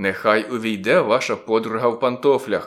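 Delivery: plain reading voice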